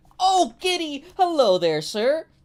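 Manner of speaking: play-acted very high, loud, overjoyed and ecstatic. Voicing a character greeting a new rival: very ecstatic. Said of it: "passive is very ecstatic to see a new rival".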